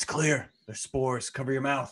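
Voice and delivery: forced, pressed-down, hushed stage whisper. Player speaking in character while exploring caverns, hushed forced half-whisper. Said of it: "kind of in a hushed, you know, forced whisper".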